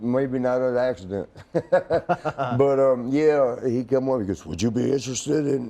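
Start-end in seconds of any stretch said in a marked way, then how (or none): 4.5-5.7 croaking, croaky frog voice. Speaker retells a man asking about running a wrestling camp; frog voice. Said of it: "and he's got a frog voice now".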